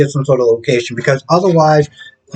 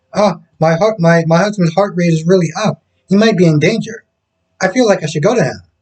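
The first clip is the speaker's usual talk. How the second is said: sneering, mocking fretful woman's voice; 3 semitones higher than usual. Mocking a soap character's worried lines about her husband: mocking imitation of Quinn. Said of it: "That sounds so stupid".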